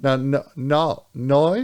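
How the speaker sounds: put-on Australian accent, saying 'noi'. Trying out how to say no in australian: attempted australian accent. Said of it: "Is that how you say no in, in Australian?".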